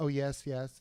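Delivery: ordinary delivery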